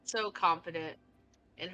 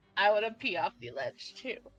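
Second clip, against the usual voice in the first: put-on loud, giggly, tipsy drunk voice; 4 semitones higher, 5 dB louder than usual. Voicing a tipsy, sugar-high character who keeps giggling: tipsy giggling. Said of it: "giggling from the sugar and the alcohol".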